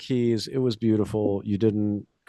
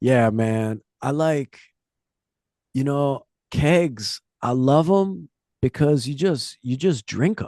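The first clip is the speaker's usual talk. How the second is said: high, full surfer-dude voice; 5 semitones higher than usual. Retelling what a guy hugging a keg in his room said, in a surfer dude voice. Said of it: "he was like a surfer dude".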